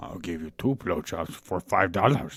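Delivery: low, soft, small, wise alien sage voice. Answering the other speaker in a scene: talking like Yoda. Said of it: "Why are you talking like Yoda?".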